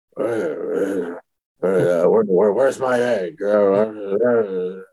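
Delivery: low, very slow, drawn-out stammer. Retelling a podcast co-host mocking how Vince's voice sounds: mocking Vince McMahon's voice. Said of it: "making fun of, like, the way Vince's voice sounds right now".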